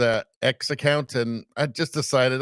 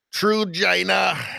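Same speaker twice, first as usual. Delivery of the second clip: creaky, rough, pitched-up politician voice; 5 semitones higher than usual. Joking about pronouncing a name the way Trump says China, Trump impression. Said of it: "Have to pronounce that like Trump pronounces China. ... I'll give it a try".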